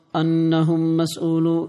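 ordinary talk

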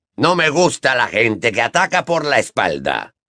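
spoken as a growl. Moody speaks while punishing a ferret with his wand, growled. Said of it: "gruñó Moody".

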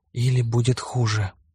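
hushed whisper. The narrator speaks up after another boy answers the father, whispered. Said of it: "прошептал я".

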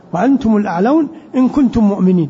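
ordinary talk

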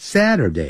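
Saturday pitch sliding from high to low. Lesson in chinese on english weekday names: falling pitch on saturday. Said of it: "由高往低这样念".

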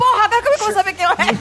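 high, desperate, despairing outburst. Retelling her panic after the soldier's face was painted over, re-enacting her despair. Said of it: "eu fiquei desesperada".

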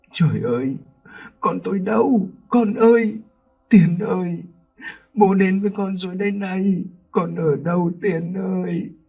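breathing hard, mumbling. A father stumbling onto the beach calls for his son, panting, muttering. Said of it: "Ông thở hổn hển rồi nói lẩm bẩm".

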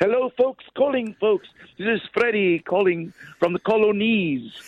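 put-on posh British accent, high-pitched. Asked by another speaker to do the posh talk, he greets the folks in posh talk. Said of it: "Do the posh talk".

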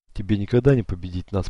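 plain reading voice

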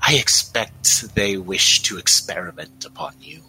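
buzzing, droning voice. Kevabiv answers a player's question telepathically in their minds, buzzing voice. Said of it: "And Kevabiv says, once again, in your minds, but only in Delilah and Sumi's minds if they allow it, you can hear the buzz of him speaking. ... you can hear the buzz of him speaking".

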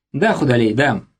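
plain reading voice

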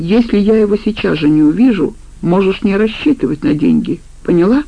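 plain

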